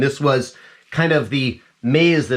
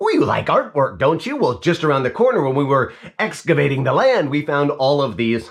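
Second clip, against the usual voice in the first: put-on spooky clown tour-guide voice; 2 semitones higher than usual. Retelling lines said as the clown guiding visitors: put-on haunted-house clown voice. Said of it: "I'm gonna stop doing the voice".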